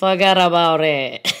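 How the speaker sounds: loud, pretty convincing put-on New York accent. Introducing the guest Robb Moreira on the episode, quote his words in a put-on New York accent. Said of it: "That was pretty New York".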